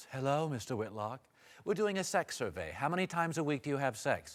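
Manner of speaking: put-on beautiful woman's voice, soft and low. Posing a hypothetical about phone surveys to another speaker, in a put-on beautiful woman's voice. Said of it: "and I was a beautiful woman's voice".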